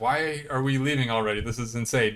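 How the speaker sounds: ordinary talk, nothing marked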